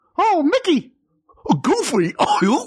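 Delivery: very high, sing-song, slowly swooping, drawn-out character voice. Asked to say the names as the characters, starting with Mickey: Mickey Mouse voice. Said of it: "say 'em as them. Mickey, go".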